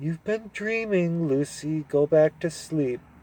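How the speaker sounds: annoying grown-up tone. Narrator reads Susan, just woken by Lucy; annoying grown-up voice. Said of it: "in her most annoying grown-up voice".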